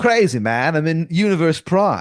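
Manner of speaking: surfer-dude voice, pitched high. Describing one of the guys, the speaker imitates him in a surfer-dude voice. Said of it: "this guy is like a surfer".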